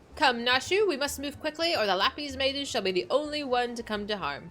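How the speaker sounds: words tumbling out rapid-fire, rattled off. The inspector urges Nashu to move quickly, talking fast. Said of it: "You speak so fast".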